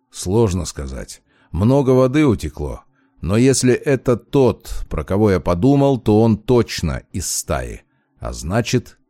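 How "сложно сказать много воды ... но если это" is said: usual speaking voice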